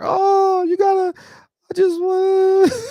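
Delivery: very high, drawn-out, play-acted tearful sobbing voice. Retelling a phone call made to ask a favor: imitating own past crying. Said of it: "I called Earl Spence crying".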